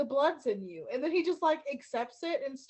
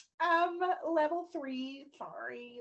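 very slow, smug, sassy delivery; 2 semitones higher than usual. Retelling a scene where a receptionist denies elevator access: imitating a sassy receptionist. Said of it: "I love the sassy receptionist".

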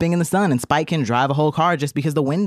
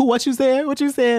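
put-on very high, combative arguing voice; 9 semitones higher than usual. Acting out a man in a car arguing with a girl in a video, imitating a man arguing. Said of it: "she's arguing with like this like stud".

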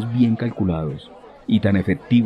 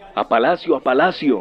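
called out loudly, pitched up; 5 semitones higher than usual. A man in grey urges on an angry crowd, giving a shouted order. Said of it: "ordenó a gritos".

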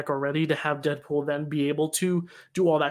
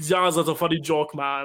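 French accent gone wrong, sliding into Russian-sounding. Trying a French accent, it keeps slipping into an Arnold Schwarzenegger accent. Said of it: "it went into Arnold Schwarzenegger Russian".

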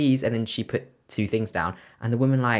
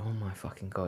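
muttered under breath, much quieter; 3 semitones lower, 15 dB quieter than usual. Retelling muttering to Gab at the checkout, muttering under breath. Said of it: "I literally muttered under my breath".

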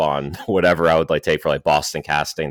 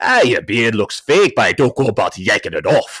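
gruff Scottish accent, pitched a bit higher; 6 semitones higher, 4 dB louder than usual. Showing a line from a visual novel role: gruff Scrooge McDuck voice. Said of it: "a Scrooge McDuck and then gruff it up".

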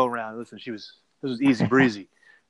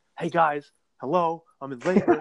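put-on yelling, higher pitch; 5 semitones higher than usual. Retelling his wife in labor yelling at the men watching the game: imitating wife yelling. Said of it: "My wife yells at us".

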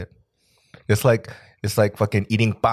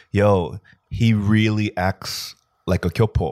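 normal talking voice

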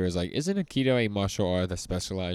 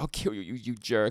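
put-on crying voice, higher; 3 semitones higher than usual. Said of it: "He's, like, crying".

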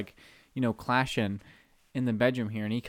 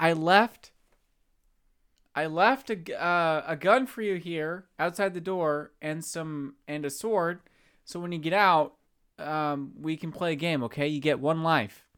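put-on yelling, called out, pitched up; 6 semitones higher than usual. Retelling a little brother talking through the bathroom door: imitating brother yelling. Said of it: "And then he starts yelling".

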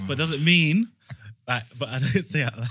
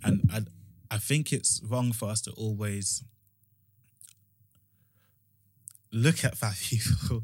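slow delivery, talking through laughter; 3 semitones lower, 4 dB quieter than usual. Giving an opinion on judging people by weight, laughing while talking. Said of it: "He can't even say it without laughing".

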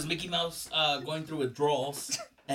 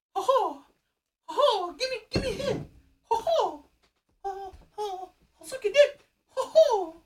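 put-on cartoon mouse voice, much higher, slower; 3 dB louder than usual. During a joking bit, using a crackhead Minnie Mouse voice. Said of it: "crackhead Minnie Mouse?".

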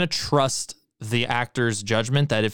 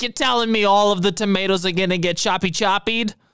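put-on sassy, pitched-up older Brooklyn lady voice; 9 semitones higher, 3 dB louder than usual. Acting out a remembered woman's question, doing a sassy older Brooklyn lady voice. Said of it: "like a sassy, like older, like Brooklyn lady".

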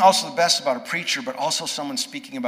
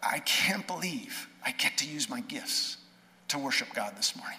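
mock quavering, trembling voice on the verge of crying; 9 dB quieter than usual. Retelling what a crying new bass guitarist said afterward: imitating speaking with trembling lips. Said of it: "with trembling lips".

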